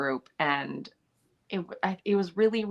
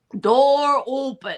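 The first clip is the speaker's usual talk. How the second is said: very loud, high, weird, bad fake British accent; 8 semitones higher, 9 dB louder than usual. Retelling a joke line done between takes: weird bad British accent. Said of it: "weird, bad British accent".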